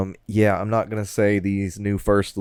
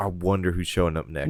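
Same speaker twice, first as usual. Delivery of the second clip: normal talking voice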